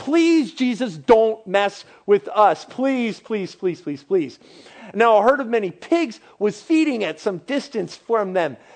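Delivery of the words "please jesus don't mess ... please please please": repeated, imploring begging. Acting out demons at Jesus' feet: acting out demons begging. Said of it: "begging Jesus".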